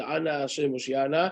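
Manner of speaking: ordinary delivery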